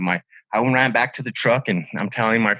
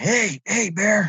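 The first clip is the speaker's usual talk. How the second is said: mock forceful, aggressive shout, pitched very high; 9 semitones higher than usual. Retelling yelling at a bear a second time, re-enacting an aggressive yell. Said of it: "like more aggressively".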